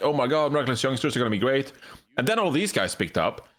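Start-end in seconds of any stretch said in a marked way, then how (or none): none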